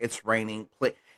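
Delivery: ordinary delivery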